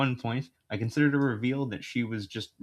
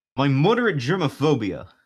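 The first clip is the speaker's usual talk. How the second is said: loud, animated, belted-out character voice; 4 semitones higher, 8 dB louder than usual. Reading one of Jay's lines from the first story, in Jay character voice. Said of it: "I say one of his lines".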